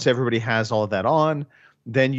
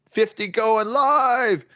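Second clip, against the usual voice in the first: very high, drawn-out drill sergeant screaming yell; 11 semitones higher than usual. Recalling range firing, the speaker imitates the old-school drill sergeant screaming. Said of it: "he's screaming this at the top of his lungs".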